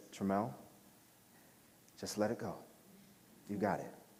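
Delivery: hushed, very soft half-whisper. Retelling what John half-whispered before a tricky shot: imitating John half-whispering. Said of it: "John whispers to me".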